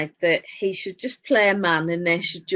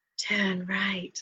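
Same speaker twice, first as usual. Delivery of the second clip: put-on breathy voice, quieter; 9 dB quieter than usual. Retelling a comedian's sat nav bit: imitating a breathy sat nav voice. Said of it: "in this breathy voice".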